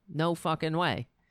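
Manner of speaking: ordinary talk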